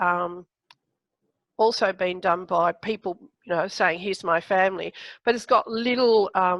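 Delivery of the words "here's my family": normal talking voice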